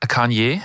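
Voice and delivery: tentative delivery with a questioning rise at the end.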